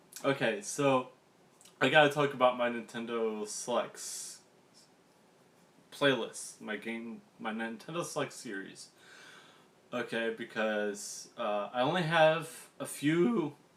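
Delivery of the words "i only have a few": high, cracking voice breaking mid-phrase. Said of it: "my voice is cracked".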